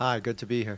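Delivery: deadpan, flat, unenthusiastic, no excitement. A returning guest greets the host at the start of the show, unenthusiastic. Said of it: "You sound really happy about it".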